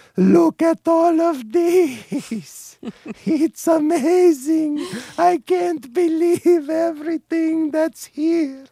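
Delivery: very high, slow, awed Eastern European accent. Explaining a dog's voice, imitating an Eastern European immigrant's put-on wide-eyed wonder. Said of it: "same voice that I equate a dog's attitude of wonder with that of an Eastern European immigrant".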